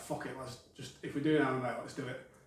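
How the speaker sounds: ordinary talk, nothing marked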